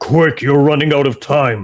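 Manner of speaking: big, booming, resounding, rolling voice. Narrating a voice that calls out from a shield, booming voice. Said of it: "very like kind of booming voice".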